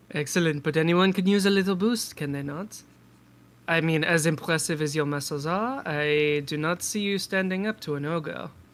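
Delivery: put-on French-sounding character accent. Playing a muscular character pushing a supplement, speaking with a french accent. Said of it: "like French".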